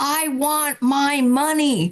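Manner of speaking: high, tearful, put-on little child's wail. Retelling being dragged into a mall by mom as a kid, retelling own childhood screaming. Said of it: "I'm just screaming".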